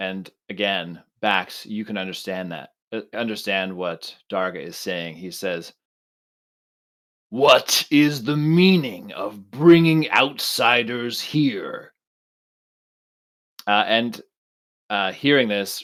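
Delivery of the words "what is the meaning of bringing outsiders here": thundering, booming, slow, enraged voice. Running the scene, voicing Darga as outsiders are brought before him: Darga's booming angry voice. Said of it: "he just booms out in Huttonese uh, at anger or in anger".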